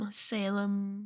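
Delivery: put-on quiet solemn voice. Retelling how Lily speaks in a follow-up episode: imitating Lily's quiet, solemn voice. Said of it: "in a solemn voice".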